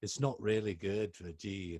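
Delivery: put-on British accent. Retelling what Angus Young said about playing in G; Angus Young British accent. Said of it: "That's a British accent".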